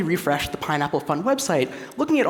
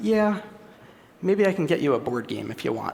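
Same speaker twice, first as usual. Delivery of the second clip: mock flat, dry, low deadpan monotone; 4 semitones lower than usual. Retelling how a man responded on a phone call, imitating a dry monotone. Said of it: "He said very dryly, in a very monotone voice".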